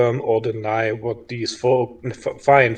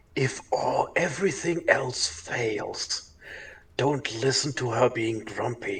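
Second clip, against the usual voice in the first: hushed, very quiet whisper; 9 dB quieter than usual. In a tabletop game, one character whispers advice to another, whispering. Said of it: "kind of whispers to Jonah".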